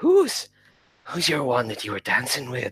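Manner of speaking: put-on Irish accent, swooping sing-song lilt. Role-play player voices a character confronting another after a party, in an unplanned irish accent. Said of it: "I don't know why I put on an Irish accent there".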